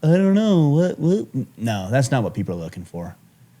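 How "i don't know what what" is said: uneasy, awkward, uncomfortable put-on voice, pitched up. Imitating people who dodge a client's question: imitating an uncomfortable person. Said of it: "But that is the voice".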